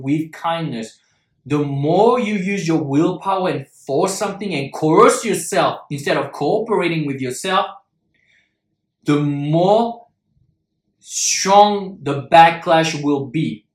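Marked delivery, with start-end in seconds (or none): 0.0-1.0 with kindness, weight on with. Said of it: "I strongly emphasize this word".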